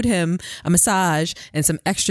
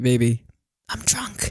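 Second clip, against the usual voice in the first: put-on whisper, lower; 4 semitones lower than usual. Retelling how he leaned over on stage, imitating someone whispering. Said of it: "leaned over and whispered in my ear and giggled".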